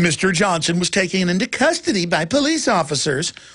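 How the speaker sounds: cheery, happy-sounding radio newsreader voice. Mocking local news people: imitating a happy-sounding announcer. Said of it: "that happy-sounding announcer going".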